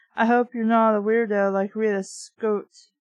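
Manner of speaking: ordinary talk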